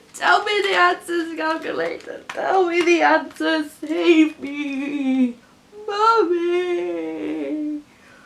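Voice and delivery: put-on baby whine. Working through maths questions, whining like a baby. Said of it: "(whining like a baby)".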